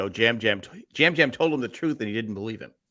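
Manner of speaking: usual speaking voice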